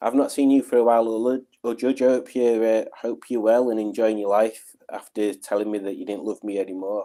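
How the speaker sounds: ordinary delivery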